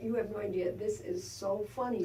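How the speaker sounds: plain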